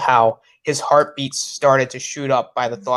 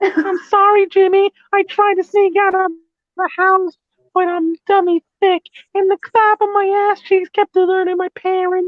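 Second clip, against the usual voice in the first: put-on nerdy kid voice, higher and louder; 4 dB louder than usual. Joining a story reading with a line as Carl from Jimmy Neutron: Carl from Jimmy Neutron voice. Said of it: "you're freaking doing Carl from Jimmy Neutron".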